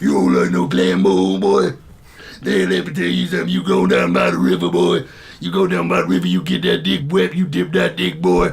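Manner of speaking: horrible, grating put-on voice, low and rough. Retelling a story about his brother, in a horrible put-on voice. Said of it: "started doing that horrible voice".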